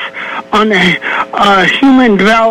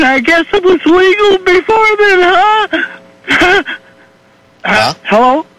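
speaking through laughter, words drawn out; 9 semitones higher than usual. Making a sarcastic point about a law, laughing while talking. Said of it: "That was a laugh".

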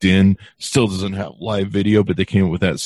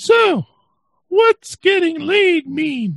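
very high, very slow, drawn-out, swooping sing-song motherly voice. Retelling a car ride with the speaker's mom, imitating the speaker's mom. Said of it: "my mom's voice sounds nothing like that".

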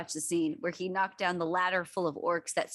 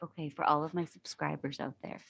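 put-on whispering voice, lower; 3 semitones lower, 4 dB quieter than usual. Joking that a wizard is live streaming to subscribers: imitating Saruman whispering. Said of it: "whispering into his mic".

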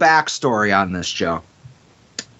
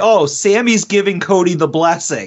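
ordinary talk, nothing marked

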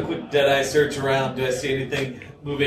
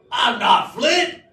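shrill, very high, loud in-character shout; 10 semitones higher, 5 dB louder than usual. Denying being flint to a crowd: yelling in character. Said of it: "take out my hat and yell".

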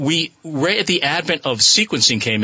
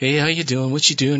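put-on, very polite Canadian voice. Retelling a border guard greeting him: imitating a very polite Canadian. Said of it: "very, very Canadian, very polite".

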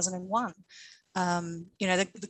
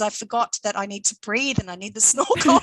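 ordinary talk, nothing marked

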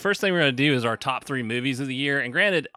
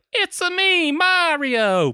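very high, loud, slow, stretched-out drawl; 4 dB louder than usual. Mocking a film's accents: Jared Leto doing Mario. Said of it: "Jared Leto comes out in a fat suit".

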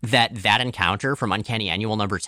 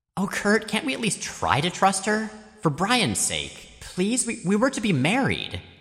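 very high, pleading, begging voice; 10 semitones higher than usual. Acting out Megan as she pleads with the others to trust her, in a pleading Megan voice. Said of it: "So Megan pleads with them to trust her".

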